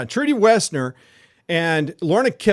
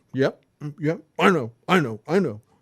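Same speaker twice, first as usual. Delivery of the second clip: put-on sulky child voice, lower and slower; 2 semitones lower, 3 dB quieter than usual. Describing a mom consoling a little kid, imitating a sulky kid. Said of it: "a little kid who just mm, just doesn't want to do anything".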